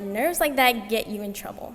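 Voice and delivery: ordinary talk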